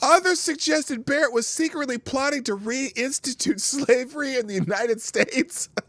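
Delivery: very high voice, laughing while reading aloud. Reading a claim aloud, unable to get through it: laughing while reading. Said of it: "I can't even read this without laughing".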